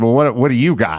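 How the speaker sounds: play-acted snide, sarcastic tone. Retelling what a man in the car replied to the speaker, mock-sarcastic. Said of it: "he sort of sarcastically said".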